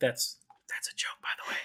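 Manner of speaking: very quiet, theatrical stage whisper. Adding a joking aside about a player's card decks: stage whisper. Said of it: "I hope the Stage Whisper carries on the mic".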